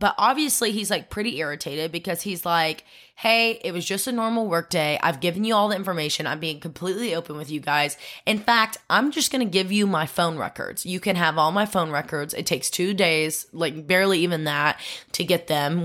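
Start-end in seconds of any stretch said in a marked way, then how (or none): none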